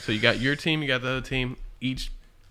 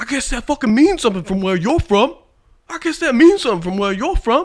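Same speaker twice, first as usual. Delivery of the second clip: put-on blaring, very high, shrill New York accent; 12 semitones higher, 11 dB louder than usual. Retelling what a teammate said during an online game: imitating a New York accent. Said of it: "got, like, a New York accent".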